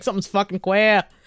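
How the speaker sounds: put-on Boston accent. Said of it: "the Boston accent saying queer".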